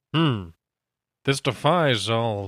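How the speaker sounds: deep, slow, deliberate voice. Showing how Egon talked in the movie: deep slow Egon voice. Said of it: "he was really deep and slow".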